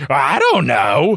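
grand, sweeping tone. Retelling the intro where Forky answers: Forky voice, big and loud. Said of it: "Forky very bigly says".

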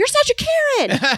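very high, loud yelling. Retelling what someone yelled after a lady who rushed past, retelling a yell. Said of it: "Zeke just yelled, he yelled after this lady".

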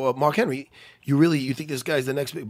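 usual speaking voice

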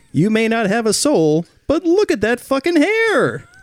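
put-on announcer voice. Reading a joke sponsor message: put-on tv studio announcer voice. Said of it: "sounds like, uh, the, the guy they have".

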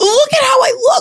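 mock shout pitched way up, very high. Retelling her reaction after her Emmys hair and makeup were done; retelling a shout. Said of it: "and I shouted".

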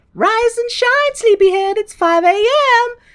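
very high, bubbly, chipper chirping, loud. Retelling a movie scene where a nun wakes someone: super chipper Sister Peggy voice. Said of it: "Sister Peggy is super chipper".

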